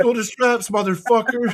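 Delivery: acted out furious yell, voice very high. Recounting a rules argument at the table, the speaker reenacts yelling at a man: retelling an angry yell. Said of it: "fucking yelled it at him".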